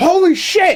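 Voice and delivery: put-on shouted exclamation. Retelling how she yelled when Kong punched Godzilla in the trailer: retelling an excited yell. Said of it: "just yelled it out".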